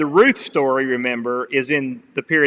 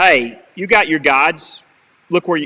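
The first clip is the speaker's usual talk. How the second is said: put-on sarcastic tone, higher and louder; 3 semitones higher, 4 dB louder than usual. Acting out what god says to the people: acting out a sarcastic line. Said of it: "It's a bit sarcastic".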